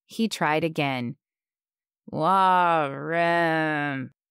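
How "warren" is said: put-on mumbled, slurred. A narrator reads a man whose words turn heavy, mumbled, slurred. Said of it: "he mumbled".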